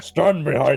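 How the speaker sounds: loud, proclaiming voice. Quoting a game character's line in his voice: Braum voice. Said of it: "I can't do his voice".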